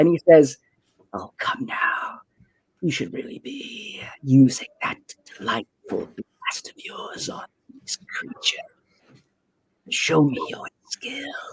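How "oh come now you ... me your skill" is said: hushed, breathy whisper. Voicing a character who whispers into a player's head: whispering into your head. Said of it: "whisper into your head".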